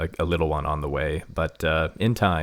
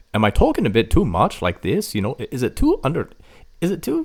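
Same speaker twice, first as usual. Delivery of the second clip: American's put-on Scottish accent, sing-song; 9 semitones higher, 7 dB louder than usual. Wondering aloud whether the voice is overdone: american trying a scottish accent. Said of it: "your Scottish accent sounds like an American trying".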